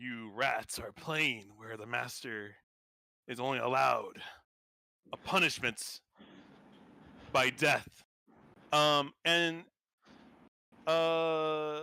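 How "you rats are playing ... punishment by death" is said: rasping voice, halting, with breaks mid-phrase. Running a game, voicing a figure the players hear speaking, in a raspy voice. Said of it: "a kind of like a raspy voice. He goes".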